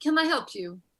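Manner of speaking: acted, put-upon, annoyed, irritated tone. Retelling a restaurant waiter coming up to them, imitating an irritated waiter. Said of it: "actually, you're irritating me".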